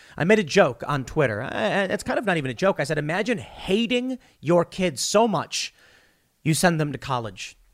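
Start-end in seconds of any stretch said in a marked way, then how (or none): none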